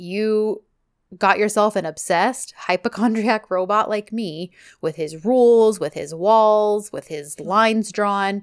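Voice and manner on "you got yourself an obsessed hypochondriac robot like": ordinary delivery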